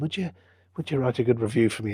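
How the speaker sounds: put-on quick little Irish accent, rattled off. Quoting a man's request after a terrible lunch, in a little Irish accent. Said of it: "he said in his little Irish accent".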